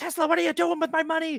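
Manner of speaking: furious, mad outburst, pitched very high. Retelling a film scene where a man confronts the inventor: imitating an angry man. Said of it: "he's all mad".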